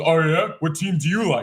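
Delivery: prickly, defensive, challenging comeback tone. Retelling a woman jumping in at the bar: imitating a woman's defensive voice. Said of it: "I'm mimicking her voice perfectly".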